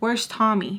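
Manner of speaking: mock super calm voice. Retelling what a man asked him while taking him out, imitating a super calm voice. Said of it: "but like super calm voice".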